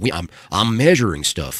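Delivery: put-on Southern accent, slow and loud. Quoting someone's dad whose job was measuring things, in a Southern accent. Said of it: "his dad has the southern accent. He's like".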